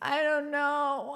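put-on high, tearful voice through sobbing. Retelling being caught after a bad haircut: imitating own childhood crying. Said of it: "I'm crying".

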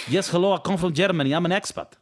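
foreign accent that sounds Russian. Demonstrating how an expat from Germany might talk, in an accent that sounds Russian. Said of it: "sounded very Russian".

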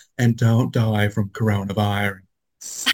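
very slow delivery, each word drawn out. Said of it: "She talks like this".

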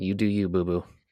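imitated Southern drawl. Speaker quotes a man's reply to a suggestion of four shots: imitating a southern drawl. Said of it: "with the southern draw".

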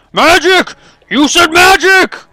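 shrill, slow, very loud, high, drawn-out shout. As skeletons attack and miss, a character starts shouting. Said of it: "Clifford starts shouting".

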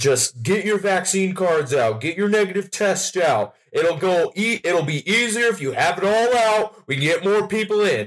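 put-on annoying yelling. Retelling a woman at a venue entrance, imitating an annoying yell.

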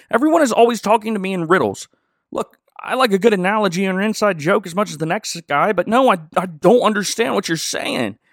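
sudden, exasperated, high-pitched furious yell. Retelling a character's sudden outburst about being spoken to in riddles: imitating someone yelling. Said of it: "just starts yelling".

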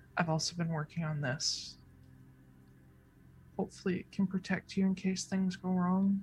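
hushed, gentle, very quiet, under-the-breath voice. Narrating Flameheart's words to the listener's character: speaking very quietly. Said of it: "he very quietly says".

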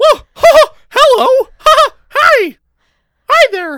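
high cartoonish voice. Talking about voice impressions, the speaker shows off a Mickey Mouse voice. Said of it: "do Mickey Mouse and it would explode into".

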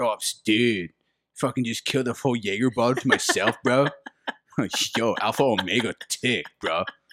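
put-on typical frat kid talk. Mocking how the speaker sounds talking about past drinking, in a frat kid voice. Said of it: "I sound like a fucking frat kid".

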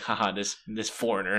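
mock laughing, mocking tone. Retelling how the other students laughed at a foreigner: imitating students laughing mockingly. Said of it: "And they're just like".

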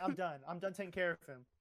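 normal talking voice

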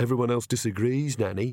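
ordinary delivery

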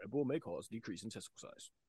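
quick, hushed delivery. Joking about the fine print in a Red Bull commercial, Red Bull ad disclaimer voice. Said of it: "the disclaimer guy voice that like goes by really fast".

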